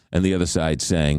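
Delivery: normal talking voice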